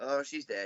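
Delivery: very flat, toneless deadpan monotone. Retelling a paramedic's line from a film: imitating a very flat voice. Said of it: "in a very flat voice".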